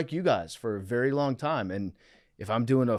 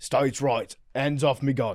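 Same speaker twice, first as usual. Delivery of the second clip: put-on Australian accent. Playing an Australian Southerner for laughs: put-on Australian accent. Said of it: "I'm Australian Southerner".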